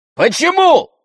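very high-pitched, loud shouting. Andrey answers his mother after she ends the discussion, shouting. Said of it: "закричал Андрей".

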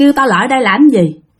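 ordinary delivery

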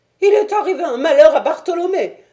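shrill, very loud, high terrified outcry. A man bursts from the house toward the visitors, arms raised; crying out in terror. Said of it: "s'écria-t-il".

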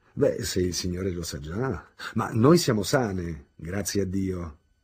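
loud, happy, glad, cheerful exclamation. A woman answers a man's question about the hospital: cheerful exclamation. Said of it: "esclamò allegramente".

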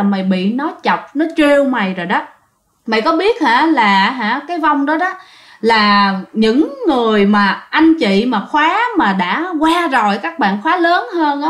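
ordinary delivery

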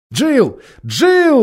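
high, despairing, desperate shout. The group calls after a companion who has vanished, shouting in despair. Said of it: "в отчаянии кричали они".

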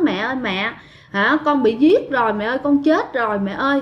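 plain

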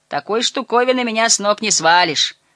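cocky, boastful swagger. Lighting a cigar among adults, the young man speaks boastfully. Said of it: "хвастливо произнес он".

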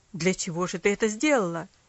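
low, loud angry outcry. A father scolds his hurt daughter, exclaiming angrily. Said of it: "сердито воскликнул он".

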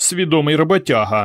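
contemptuous, scornful, tossed-off single word. Varka comments on a woodpecker while sitting with Ivan and Petro: scornfully. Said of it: "зневажливо кинула слівце Варка".

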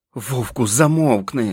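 words forced out in a hiss. Amid shouting in the hall, the wolf's companion tells the wolf to be quiet, hissed. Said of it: "зашипів Джек".

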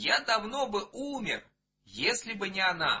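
animated exclamation. A grandfather speaks to the child, exclaiming. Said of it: "воскликнул дедушка".

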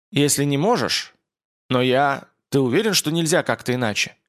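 ordinary delivery

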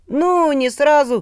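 reluctant, grudging, very high-pitched. Reading a character answering a doubting questioner, reluctant admission. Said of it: "нехотя признался Талибася".

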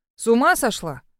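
ordinary delivery

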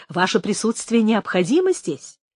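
ordinary delivery

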